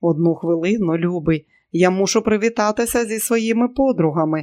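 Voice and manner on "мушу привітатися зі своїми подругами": ordinary delivery, nothing marked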